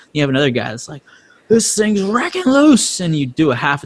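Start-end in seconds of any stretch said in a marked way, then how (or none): 1.5-3.0 screaming, very high-pitched. Retelling another driver's radio feedback about the car: imitating a driver screaming. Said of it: "you're screaming at me".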